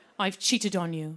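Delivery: low, put-on English accent. Comedian acting out an imagined British boyfriend's line, in a put-on English accent. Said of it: "[ English accent ]".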